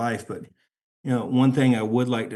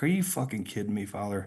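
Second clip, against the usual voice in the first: mock, hushed, angry, pissed-off, disbelieving tone; 6 dB quieter than usual. Retelling his reply to the father, as a mock-angry retort. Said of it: "I remember being so pissed off".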